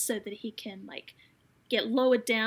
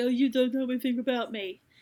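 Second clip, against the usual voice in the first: put-on snotty, bratty teenager tone, retorting. Retelling a hurt teenager's retort: imitating a snotty teenager. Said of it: "being typical snotty teenager".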